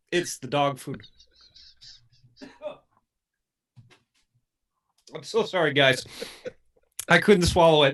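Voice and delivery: tearful voice, crying and gagging, retching. Reacting after failing to swallow a dog food jelly bean: crying and gagging. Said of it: "I'm crying and gagging".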